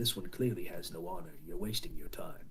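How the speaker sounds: mumbling under breath. Voicing a blue Oni muttering about the newcomer: mumbling under his breath. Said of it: "mumbles under, under his breath".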